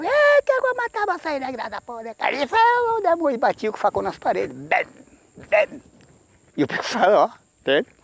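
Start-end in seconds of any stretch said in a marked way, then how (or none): 0.0-2.5 put-on furious old man shout, higher. Retelling a night when an old man ran with a machete: retelling an old man's yelling. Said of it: "ele gritava".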